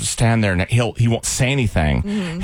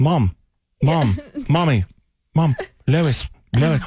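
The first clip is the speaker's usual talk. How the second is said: very slow, annoying, dragged-out repeated calling; 4 semitones higher than usual. Showing how the nagging sounds: Stewie Griffin impression. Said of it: "it sounds like the Stewie Griffin".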